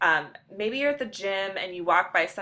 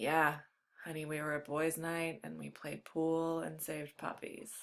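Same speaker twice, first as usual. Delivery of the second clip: voice sunk low, deep and very soft; 3 semitones lower, 11 dB quieter than usual. Showing how a man's excuse to his honey sounds in a deepened voice. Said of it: "deepen your voice by like".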